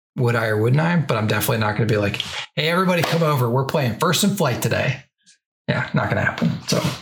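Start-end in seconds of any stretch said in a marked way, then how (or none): none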